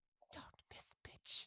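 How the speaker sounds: hushed, breathy whisper, very close. Player character going up to Iphilia's ear in the game, whispering in her ear. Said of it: "I go up to Iphilia's ear and I whisper to her".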